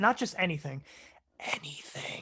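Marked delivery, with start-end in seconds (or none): 1.4-2.2 soft whisper in ASMR style. Telling viewers to ask about anything: asmr whisper. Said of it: "did I do the A S M R whisper?".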